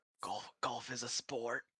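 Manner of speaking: very soft, hushed half-whisper. Half-whispering an explanation to a companion from the shadows: half-whispering from the shadows. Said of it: "I whisper from the shadows".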